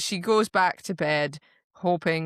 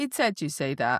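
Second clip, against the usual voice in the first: ordinary talk, nothing marked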